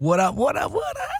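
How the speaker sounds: voice cracking. Greeting the podcast host on arrival: voice cracking. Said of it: "my voice just cracked right there".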